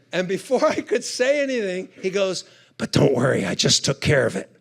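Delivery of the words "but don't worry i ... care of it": put-on whisper, lower. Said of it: "he's whispering over the phone".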